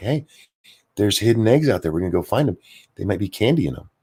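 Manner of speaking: put-on gentle, soothing, coaxing calming voice. Retelling how they talked an upset child out of a fit: imitating own calming voice for a child. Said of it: "I talked to her in this voice".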